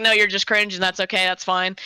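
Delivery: ordinary talk, nothing marked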